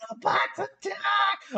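very high-pitched character voice. Retelling a blooper from a recorded audition: Starscream voice. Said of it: "he did the star scream voice".

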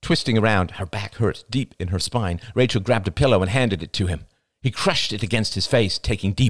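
ordinary delivery, nothing marked

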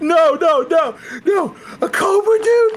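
put-on terrified panic, very high, climbing, drawn-out, pleading. Retelling a scene where someone afraid of snakes meets a cobra: imitating a terrified panic. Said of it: "there's the moment where he's like".

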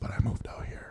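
unvoiced whisper.

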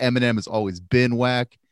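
normal talking voice

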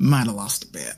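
low, sheepish, mumbled delivery. Game master voicing a character who turns to the player, mumbling. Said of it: "turns to you and mumbles".

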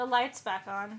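acted-out deadpan, flat, no expression at all. Telling a story and quoting Karen's line, imitating Karen's flat voice. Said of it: "in a flat voice said".

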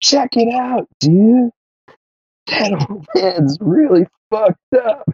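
tiny, very high little voice. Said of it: "and he does the little voice".

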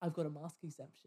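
mock smug, hushed, pleased-with-itself tone. A store worker imitates customers who refuse masks, mocking a smug customer. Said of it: "they so smugly go".

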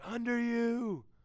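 high, slow, drawn-out scream. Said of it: "we'll just start screaming".

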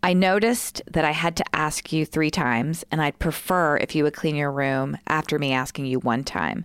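ordinary talk, nothing marked

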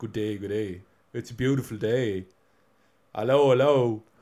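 put-on slow, loud Dublin-accented voice. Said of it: "He's not like".

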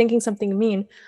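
plain

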